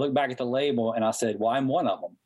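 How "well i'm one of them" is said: deadpan, flat delivery. Recounting the speaker's answer to a man's question about a label: retelling a deadpan reply. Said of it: "And I literally deadpan".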